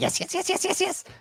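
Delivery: goblin chatter pitched very high. Game master answering a player's order, speaking as the goblin in goblin voice. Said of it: "I'll look at the goblin".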